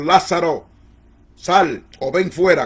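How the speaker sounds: slow, masterful, powerful commanding voice. Quoting Jesus calling Lazarus out of the tomb: Jesus's commanding voice. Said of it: "con voz de autoridad magistral".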